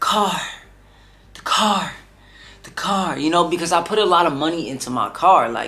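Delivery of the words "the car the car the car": put-on tearful crying, slow and sobbing. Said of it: "I heard her voice and I just started crying".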